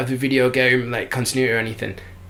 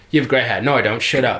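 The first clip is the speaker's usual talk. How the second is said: put-on monotone, flat, toneless bickering, pitched lower; 2 semitones lower than usual. Retelling two show characters' scripted argument, as monotone bickering. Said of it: "the most like monotone bickering".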